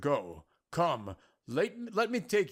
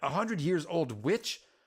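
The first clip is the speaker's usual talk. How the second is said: plain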